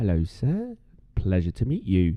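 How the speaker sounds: gentle, ever so soft, hushed. Speaker acting out how you greet the proper guys, in a soft voice. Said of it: "everything is like so in like so soft".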